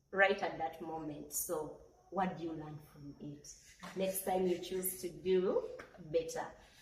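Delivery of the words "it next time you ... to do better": ordinary talk, nothing marked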